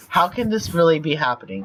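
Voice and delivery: ordinary talk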